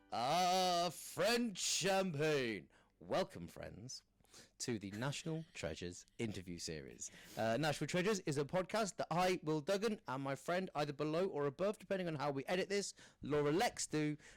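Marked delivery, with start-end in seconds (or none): 0.1-7.1 put-on hammered, drawn-out drunken drawl, "ah" drawn out. Imitating a champagne advert where the actor is hammered: drunk Orson Welles voice. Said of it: "Orson Welles doing the champagne? He's absolutely hammered".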